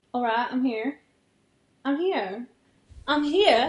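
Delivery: put-on British accent on every phrase. Trying a requested country accent that comes out as a british accent. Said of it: "that's a British accent".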